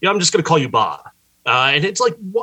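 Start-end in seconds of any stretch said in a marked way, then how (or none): 0.0-1.1 acted-out offhand, dismissive brush-off, rattled off. A speaker retells a man's remark to someone with a hard-to-pronounce name, mock-dismissive. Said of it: "Gibson just dismissively goes".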